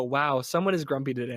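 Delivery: ordinary talk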